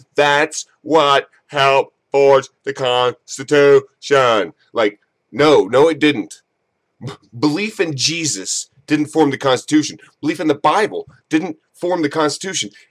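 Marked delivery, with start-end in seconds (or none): 0.2-4.6 slow, drawn-out delivery, word by word. Mocking a TV pundit's line by saying it slowly like Bill O'Reilly. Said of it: "I like how Bill O'Reilly says it slowly".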